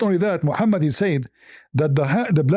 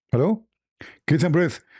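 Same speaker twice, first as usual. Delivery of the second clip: ordinary delivery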